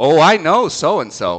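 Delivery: slow, loud, pointed, knowing delivery. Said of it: "And I said it like that".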